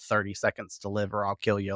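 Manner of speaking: plain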